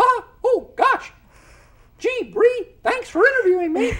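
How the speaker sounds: very high, loud, squeaky cartoon voice. Showing how combining voice differences gives cartoon voices: Mickey voice. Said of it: "you can get Mickey".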